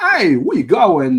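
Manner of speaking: put-on New York accent. Showing the New York part of Christopher Walken's accent: Christopher Walken with New York accent. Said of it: "But they never do".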